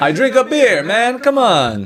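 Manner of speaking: very high, swooping, muddled, botched New York accent. Joking after a good line: mixed put-on accents. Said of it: "three different accents right there".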